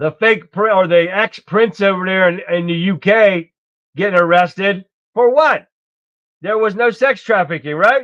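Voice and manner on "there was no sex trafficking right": dry, sarcastic, mocking tone. Mocking an official claim that no trafficking happened: sarcastic. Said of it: "know the sarcasm".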